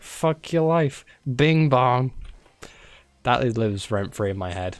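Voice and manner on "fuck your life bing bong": high-pitched, tossed-out delivery. Retelling a viral video from Coney Island: imitating the Coney Island video guy. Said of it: "The guy's like".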